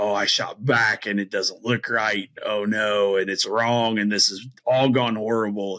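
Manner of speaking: ordinary talk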